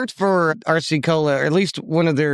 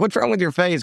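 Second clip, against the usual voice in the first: usual speaking voice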